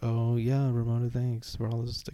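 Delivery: sugary, put-on polite, fake-nice tone. Retelling how someone plays the nice card: imitating Jenna playing nice. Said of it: "plays the nice card, like".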